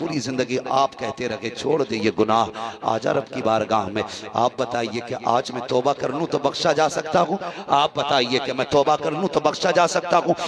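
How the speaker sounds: ordinary talk, nothing marked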